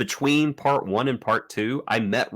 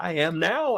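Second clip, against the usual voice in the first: voice cracking and breaking mid-line, pitched up; 8 semitones higher than usual. Retelling an emotional scene from an episode, imitating Avery Brooks, voice cracking. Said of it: "and he kisses Jake and his voice cracks".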